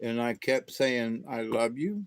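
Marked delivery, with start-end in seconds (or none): 1.3-2.1 put-on tearful, crying voice, quieter. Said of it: "my voice started to crack, and I was crying".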